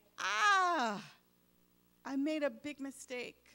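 put-on loud screamed cry, the ah stretched long. Retelling a movie scene where Satan sees his mistake: imitating Satan screaming. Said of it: "he's screaming like".

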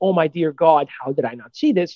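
plain

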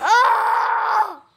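sudden, high, loud, pained, startled yelp.

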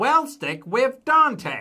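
chirpy, cheery, very high, loud put-on voice. Reading a story aloud, a character interrupts in cheery Chen impression. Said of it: "cheerily interrupting her in a perfect imitation of Chen's voice. Nailed it".

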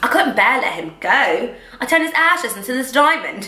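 put-on, fake British accent. Retelling a woman's words about keeping his ashes, in a put-on british accent. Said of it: "I'm gonna keep doing it".

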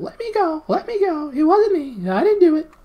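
very high, very loud, drawn-out squealing. Narrator voicing a held Earthman denying blame, squealing. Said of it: "squealed the Earthman".

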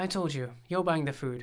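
ordinary delivery

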